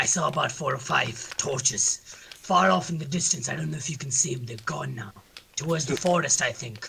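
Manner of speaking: gruff, low human character voice. A player's human character reports to the group: gruff human voice. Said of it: "He's a gruff human. / He's a gruff human. / He's a gruff human. This human needs some He's Battleborn. goddamn Listerine".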